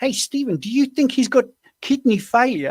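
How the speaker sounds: put-on very high South African woman's accent. Retelling a mother's question about her son, south african accent. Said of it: "I will try to do the accent".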